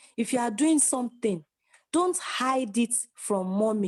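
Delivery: ordinary talk, nothing marked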